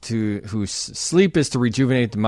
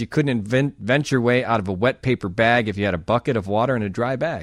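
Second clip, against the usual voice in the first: normal talking voice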